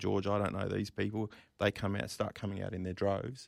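ordinary talk, nothing marked

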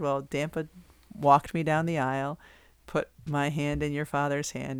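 ordinary delivery

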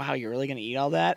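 put-on sarcastic, wry tone. Retelling own remark at the snack counter: imitating own sarcastic remark. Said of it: "And now you were being sarcastic".

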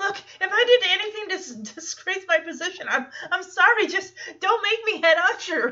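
put-on high, loud, frantic, stumbling panicked voice. Retelling a character's reply on being told he was a mistake as best man: imitating a panicked plea. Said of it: "Poor Joey is panicked".

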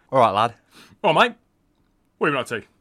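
very loud, fast, chummy matey workman voice. Playing the workman in an improvised bit with James, matey workman banter. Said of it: "I've been working on my workman banter".

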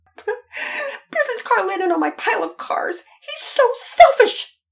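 tearful wail, half crying, half screaming, very high, very loud. A girl answers her father, who asks about the racket: half crying, half screaming. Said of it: "She was half crying and half screaming".

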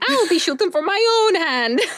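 very high-pitched, loud, fake Scottish accent. Quoting a woman's line from a trailer for a friend, loud put-on Scottish accent. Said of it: "That's why I had to say it so loudly".

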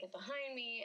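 usual speaking voice

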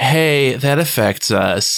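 put-on, very lazy, laid-back, too-cool-to-care voice. Quoting a cool goth character from a scene, in mock lazy, cool voice. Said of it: "in this very like lazy, cool voice".

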